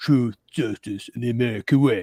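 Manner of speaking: tough, action-hero soldier voice. Retelling what a man dressed in camo said when asked about his voice, Rambo voice. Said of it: "essentially doing Rambo... what are you doing with your voice?".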